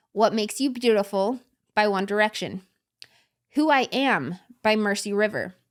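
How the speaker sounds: unhurried, each phrase set apart.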